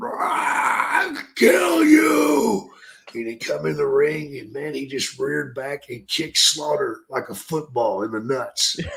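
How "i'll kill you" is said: mock wild, very high-pitched madman scream. Retelling a fight in the ring as one man turns around, imitating a madman's screaming. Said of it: "he's just screaming like a madman".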